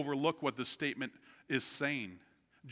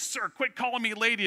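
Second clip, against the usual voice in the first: mock-angry, sharp tone; 7 semitones higher, 5 dB louder than usual. Retelling a woman who got mad at the speaker, mock-angry. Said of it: "she got mad at me".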